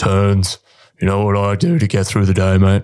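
big, booming sergeant voice. Retelling what a sergeant said on a pack march: imitating Lofty's big booming voice. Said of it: "He's got this big booming voice".

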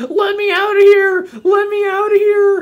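very high, very loud, shrill, drawn-out crying wail. Retelling a toy in a box at Cracker Barrel: imitating a toy yelling. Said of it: "and it goes".

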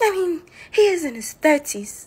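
play-acted, put-on British accent. Two people read a gossip script aloud, taking turns; British accent. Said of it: "British accent edition".

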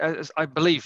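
strong, loud emphasis on the word "believe".

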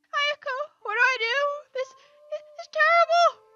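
yelling in a panic. Character calls out to Ayako for help, with panicked yelling. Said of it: "what are you yelling about this time?".

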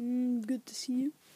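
whispered put-on character voice.

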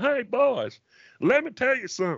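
put-on dumb simple-man voice. Explaining a kind of voice to the others, then doing it: 'Simple Man' kind of voice. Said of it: "you can get away with that voice".

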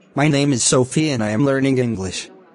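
ordinary talk

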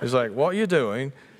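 put-on British accent. Retelling what actors smoking outside asked her, perfect british accent. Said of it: "That's perfect British accent".

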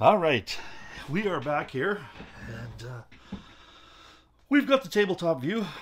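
out of breath. Streamer returning to the tabletop view after running downstairs, out of breath. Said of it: "I'm a little out of breath".

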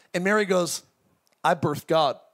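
ordinary delivery

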